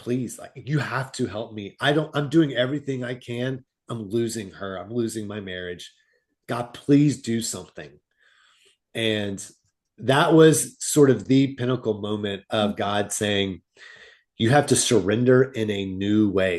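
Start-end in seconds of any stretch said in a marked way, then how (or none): 0.0-7.9 acted-out crying, tearful voice. Speaker recounting breaking down while praying to god, retelling a crying plea. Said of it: "I broke down and cried and just said".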